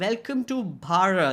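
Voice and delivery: put-on, fake American accent. Imagining an Indian bureaucrat greeting a Karen type person, the speaker does his fake American accent. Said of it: "he'll try to fake an American accent".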